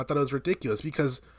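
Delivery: ordinary talk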